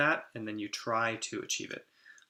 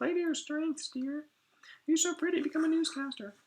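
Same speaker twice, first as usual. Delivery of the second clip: very high, put-on old granny voice. Mocking advice to play to your strengths, imitating an old grandmother. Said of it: "the advice that a grandmother would give".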